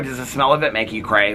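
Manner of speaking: normal talking voice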